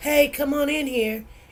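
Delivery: laid-back, easygoing, relaxed, low-energy voice. Showing how tone matters more than words: relaxed, cool tone. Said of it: "she relaxed, she's cool".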